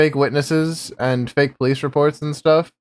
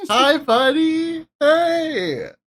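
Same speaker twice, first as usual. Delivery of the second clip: very high, fake-friendly, put-on nice tone; 13 semitones higher than usual. Greeting Willie, who already seems annoyed to see them: put-on nice tone. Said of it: "trying to put on the nice tone".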